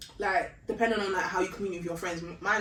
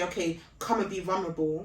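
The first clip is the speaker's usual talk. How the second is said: ordinary talk, nothing marked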